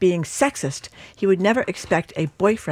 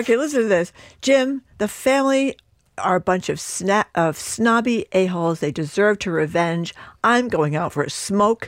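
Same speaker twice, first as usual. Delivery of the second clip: plain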